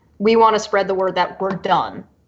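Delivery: ordinary delivery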